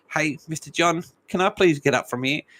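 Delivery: small, shaky, trembling voice. Narrator reads the little devil's words to John, in a shaky little voice. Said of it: "a shaky little voice from the blur of the rocker said".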